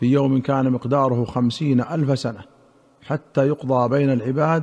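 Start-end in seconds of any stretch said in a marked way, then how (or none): none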